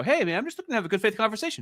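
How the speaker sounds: play-acted sneering, mocking mimicry. Mocking the other speaker by imitating what he would say: mocking imitation of him. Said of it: "then go".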